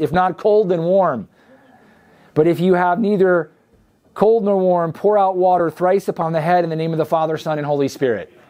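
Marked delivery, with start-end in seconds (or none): none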